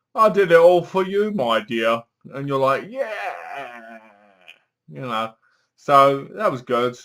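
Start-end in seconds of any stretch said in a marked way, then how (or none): 0.1-2.0 put-on, movie-villain-style English accent. Reviewing a film, quoting the killer's line in an English accent. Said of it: "the killer has an English accent".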